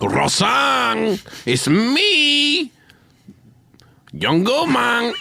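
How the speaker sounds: slow, drawn-out, stretched delivery. Asked to name a person, speaker performs a John Goodman impression. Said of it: "this is my impression of John Goodman".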